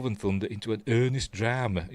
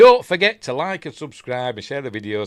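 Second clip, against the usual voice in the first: booming, far too loud voice; 2 semitones higher, 9 dB louder than usual. Signing off a video to viewers, said too loudly. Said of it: "That came out loud".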